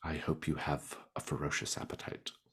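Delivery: hushed whisper. Voicing a noble lady leaning over to a guest at a feast: whispering. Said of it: "leans over and whispers to you".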